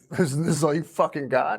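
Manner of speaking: mock screaming. Retelling walking drunk through the woods that night, imitating screaming at the sky. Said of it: "just screaming at the sky".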